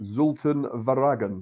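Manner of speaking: clumsy, appalling attempt at Dutch pronunciation. Reading out a transfer's former club name: best Dutch pronunciation effort. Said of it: "that's my best Dutch effort".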